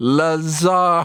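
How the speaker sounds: put-on British tourist, loud and slow. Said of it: "impression of any British person abroad".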